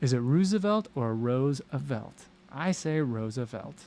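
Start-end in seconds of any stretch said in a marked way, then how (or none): none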